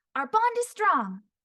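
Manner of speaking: shrill, very high, slightly nasal, loud, a little punchy. Speaker demonstrates character voices one by one, slight nasal, high-pitched Cookie voice. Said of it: "it's a slight nasal, high pitched".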